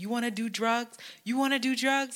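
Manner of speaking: high, mock furious, close-up in-your-face yelling. Retelling a man confronting the speaker about drugs, imitating his yelling. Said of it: "was in my face yelling at me".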